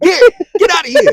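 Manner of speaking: mock very high shrill shout. Acting out driving off unwanted exes: like shooing a dog away. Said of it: "You sound like you're telling the dog to get out".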